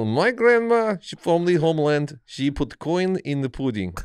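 big, swooping, sing-song put-on Russian accent. Mid-conversation, switching into a Balki Bartokomous mock Russian accent. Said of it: "You're basing your Russian accents off the GoldenEye video game?".

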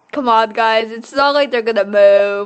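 heavy, loud, openly sarcastic, tongue in cheek. Talking to stream viewers, being sarcastic. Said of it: "I'm just being sarcastic".

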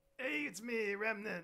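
high, slow, loud, stretched-out playful creature voice. Asked to do a Remnant in honor of Ash, speaker does a Remnant voice. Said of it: "Can you do a remnant".

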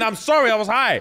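weepy, sobbing, tearful crying delivery. Retelling a man's tearful confession to the boss: imitating someone crying. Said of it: "I'm opening up and I'm crying".

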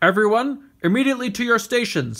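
high, bellowing, loud voice. A ship's captain calls everyone to their stations over the loudspeakers, bellowing. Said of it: "the captain bellowed over the ship's loudspeakers".

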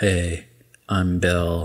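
flat deadpan monotone, level pitch, no lift. Picturing Tina from Bob's Burgers in a Belle costume: Tina impression, flat monotone. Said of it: "Monotoned, just like".

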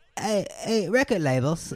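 put-on Swedish accent. Playing Spotify in a skit, partner plays the record label: Spotify in Swedish accent. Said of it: "This is my Swedish accent".

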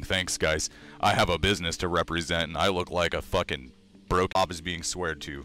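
usual speaking voice

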